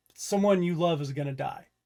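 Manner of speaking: plain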